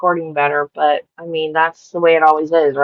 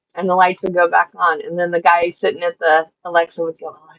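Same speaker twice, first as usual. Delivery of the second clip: usual speaking voice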